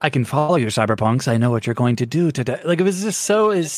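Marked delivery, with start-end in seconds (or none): 0.0-2.6 put-on stilted acting voice, lower pitch. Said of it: "his cadence".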